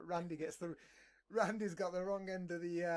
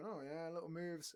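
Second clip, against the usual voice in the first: soft, low-key, quiet muttering; 5 dB quieter than usual. Imitating the opponent on the other end: imitating a quiet opponent. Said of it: "sitting there all quiet".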